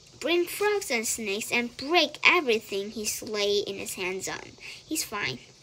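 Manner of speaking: ordinary delivery, nothing marked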